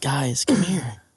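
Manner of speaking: gentle, mellow, easy, coaxing tone. Retelling someone in the back of the van calling the guys: imitating Zach talking softly. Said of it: "Talking real soft".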